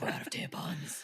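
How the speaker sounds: put-on gruff superhero voice. Performing an old stand-up bit, something Batman would never say: Batman voice. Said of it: "things Batman would never say in Batman's voice".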